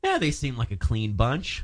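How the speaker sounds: ordinary talk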